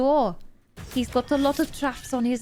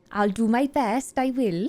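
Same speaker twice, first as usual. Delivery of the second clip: put-on, fake-sounding Welsh accent; 3 dB louder than usual. Reacting to a skill description in a put-on welsh accent. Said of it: "I'm going to have to talk like this".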